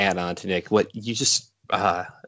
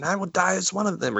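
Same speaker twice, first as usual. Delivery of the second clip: mock yelling, pitched very high; 11 semitones higher than usual. Retelling a movie character's battle speech line: imitating someone yelling. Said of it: "and he yells".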